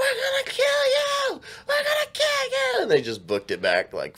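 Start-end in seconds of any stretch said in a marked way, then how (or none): 0.0-2.8 mock screeching scream, pitched very high. Retelling a story where a woman got out of the car: retelling someone screaming. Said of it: "screaming at 'em".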